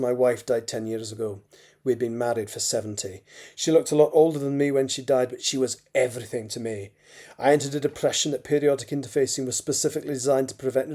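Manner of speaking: usual speaking voice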